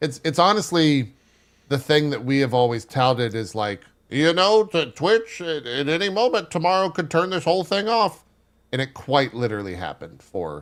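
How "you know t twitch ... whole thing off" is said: put-on pitched-up elderly man voice. Repeating a warning said for ten years, in an old man voice. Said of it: "the old man voice for that".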